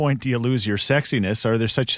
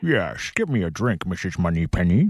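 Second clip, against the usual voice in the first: full cartoon voice, low and swooping; 4 semitones lower than usual. On Impression Friday, asked what he would say, do a full-cartoon Sean Connery impression. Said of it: "You just go full cartoon".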